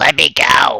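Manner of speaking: thin, high, squeaky little creature voice. Narrator voicing a captive's plea to the players, high squeaky voice. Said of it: "You just hear a high squeaky voice".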